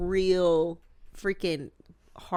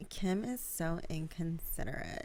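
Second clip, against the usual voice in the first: slow, mocking, drawn-out drawl; 8 dB quieter than usual. Retelling an online parody of Kourtney complaining: mocking Kourtney impression. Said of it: "imitating her".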